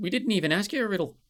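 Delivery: put-on grumbling Irish accent. A storyteller voices one of the trees, in an Irish accent. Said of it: "Why did I go Irish then?".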